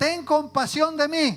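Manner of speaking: acted, desperate shouted plea. Preacher acting out a man crying out to Jesus, retelling a desperate shout. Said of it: "empieza a gritar".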